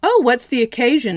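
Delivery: bright, high, chirpy tone. Anne, the mother's day nurse, answers the mother as she walks in, chirping. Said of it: "Anne chirped".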